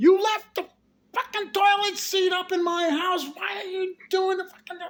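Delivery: mock furious screeching, shrill and very high. Retelling how a woman screamed about the toilet seat: imitating a woman screaming. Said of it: "She was screaming at the".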